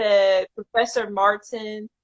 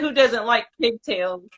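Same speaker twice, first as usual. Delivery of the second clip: ordinary delivery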